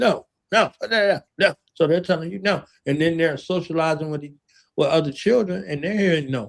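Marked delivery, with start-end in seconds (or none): 0.0-1.5 very slow, stern, authoritative, commanding tone. Showing the tone in which children keep hearing no: stern commanding tone. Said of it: "It's a command authoritative tone".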